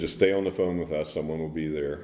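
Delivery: plain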